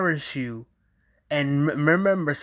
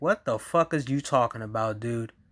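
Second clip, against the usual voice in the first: acted woman's voice, confused, baffled disbelief; 5 semitones lower, 4 dB quieter than usual. Acting out the woman's reaction to a man's conversation: imitating a baffled woman. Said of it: "she looking at him like".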